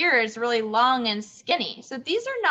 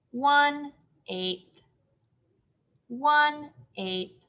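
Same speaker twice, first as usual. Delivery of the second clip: mechanical, machine-like robot voice. Labelling fraction parts for a class, robot voice. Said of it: "I sound like a robot".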